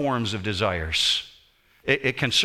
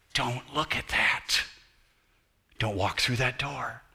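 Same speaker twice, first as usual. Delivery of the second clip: tender, gentle, soft half-whisper; 6 dB quieter than usual. Speaking of the Spirit's guidance, the speaker voices it in a gentle half-whisper. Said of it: "Sometimes it's a gentle whisper".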